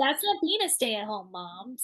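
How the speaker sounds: exaggerated put-on heavy sarcasm. A stay-at-home mom voices people who judge her, super sarcastic mock quote. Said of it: "I'm saying that super sarcastically".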